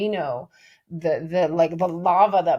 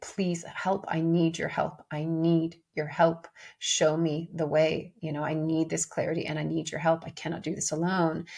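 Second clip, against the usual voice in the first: put-on desperate pleading, quieter; 6 dB quieter than usual. Retelling own words while crying in the car: imitating own pleading. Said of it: "pleading, pleading".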